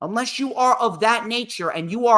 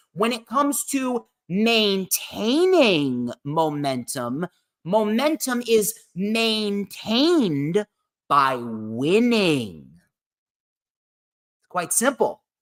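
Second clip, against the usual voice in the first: very slow, deliberate, word by word. Speaker tells his listeners he will say this very slowly, then says it very slowly. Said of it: "I'm going to say this very, very slow".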